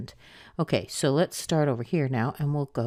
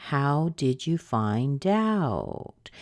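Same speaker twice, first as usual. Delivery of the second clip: heaviest stress on the final word out. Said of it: "you'll really hear it on the last word, out".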